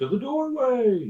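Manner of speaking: very loud, high-pitched, shrill scream. Calling out to everyone in the party in character: screaming. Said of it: "I scream to everyone".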